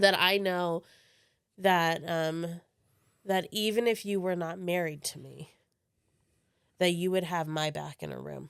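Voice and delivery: moved, earnest, emotional, heartfelt voice. Speaking to their spouse about being married to them, getting emotional. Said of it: "I'm getting emotional now".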